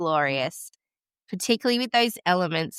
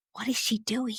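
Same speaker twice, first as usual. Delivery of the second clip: put-on whisper, much quieter than normal speech; 5 semitones higher, 6 dB quieter than usual. Retelling what the midwife said while the speaker laughed in labour, imitating a whisper. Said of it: "I heard my midwife whisper".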